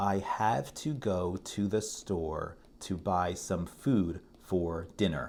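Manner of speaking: very slow, each syllable given equal weight. Reading a natural English sentence aloud, slow, even syllable-by-syllable. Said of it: "I said each syllable carefully with the same emphasis and the same amount of time. I said every word slowly".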